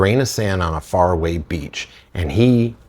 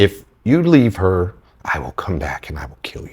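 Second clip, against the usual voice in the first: put-on menacing, threatening voice. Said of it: "in that tone".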